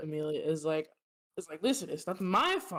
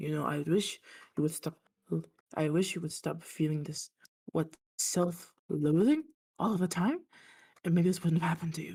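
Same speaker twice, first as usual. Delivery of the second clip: muted, quick, subdued character voice. In a tabletop game, the narrator voices Amelia speaking: Amelia, muted voice. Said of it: "in a more muted voice".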